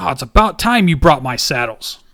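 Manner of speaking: loud, grumbling, gruff dwarf voice. Voicing a dwarf who opens the door to visitors: voicing a gruff dwarf. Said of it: "you see a dwarf open the door".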